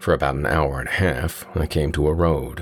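ordinary delivery, nothing marked

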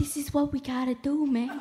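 hushed, quiet voice. Imitating the current president who randomly talks: imitating a hushed voice. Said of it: "he'll randomly go in a hushed voice like".

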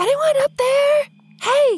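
very high, loud stage whisper, hiss-shouted upward. Player calls up to the tower in the game, whisper-yelling. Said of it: "I'm going to whisper yell".

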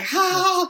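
nervous, forced, high ha-ha laugh. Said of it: "And he's like".

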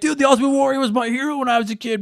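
worked-up, upset, high-pitched protesting tone. Imitating listeners screaming at their phones in protest: imitating screaming fans. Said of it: "screaming at your phones right now, being like".

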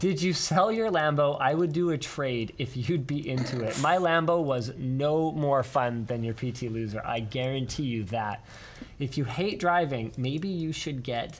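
plain

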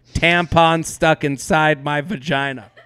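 ordinary delivery

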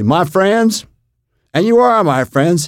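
put-on very high-pitched voice with Texas accent. Retelling a speech heard at a table: Jack Valenti with Texas accent. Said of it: "short little guy with a Texas accent say".

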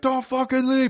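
play-acted drunken yell, pitched way up, very high. Speaker retelling a drunk guy shouting at a comic leaving stage, imitating a drunk guy yelling.

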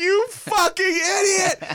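very high, shrill screaming. Retelling lying in the car after a bad audition, reenacting screaming at oneself.

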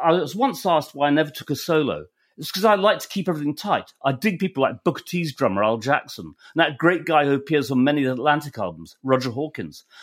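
ordinary delivery

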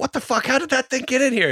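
play-acted, very high screaming. Recounting a squirrel loose in the living room with family, retelling a scream. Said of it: "we're just screaming".

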